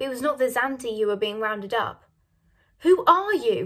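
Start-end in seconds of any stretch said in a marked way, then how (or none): 2.8-3.7 furious, indignant, raised voice. Miss Minton demands of the invaders' leader who he is, furious. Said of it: "said Miss Minton furiously".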